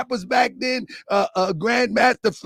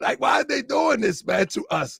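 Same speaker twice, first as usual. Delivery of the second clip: plain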